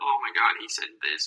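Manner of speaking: acted-out whining, oversensitive, complaining voice. Comedian imitating a sensitive crowd from rough sets, mocking a whiny crowd. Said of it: "just being whiny and being like".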